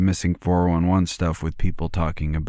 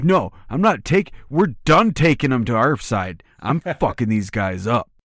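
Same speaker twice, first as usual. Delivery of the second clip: high-pitched, enraged monster voice; 6 semitones higher, 3 dB louder than usual. Acting out an angry Bigfoot-like creature that turns on people: angry creature voice. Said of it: "He's like".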